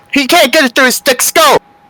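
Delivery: screaming. Shouting in front of two guards about someone who won't understand: screaming. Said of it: "I am screaming".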